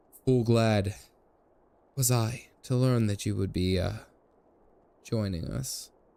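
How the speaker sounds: breathy, halting murmur close to the mic. Imitating the Aymeric voice actor breathing into the mic, breathy Aymeric voice. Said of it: "like like breathing into the mic. It's about to be A S M R".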